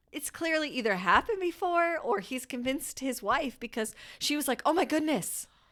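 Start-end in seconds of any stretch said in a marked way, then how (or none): 4.6-5.4 mock terrified, high, petrified near-death alarm. Retelling the wife's reaction to the candle: imitating acted petrified fear. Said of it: "acted petrified".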